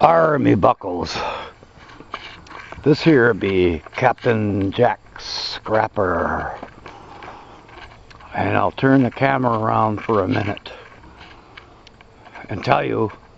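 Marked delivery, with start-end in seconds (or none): 0.0-6.6 put-on slow, drawn-out old pirate voice. Speaking to the camera before turning it around, talking like a pirate. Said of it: "why I'm talking like a pirate".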